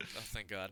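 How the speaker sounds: quiet mutter under breath. Playing a character relieved there will be no reanimation: muttering under breath. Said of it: "mutter under my breath".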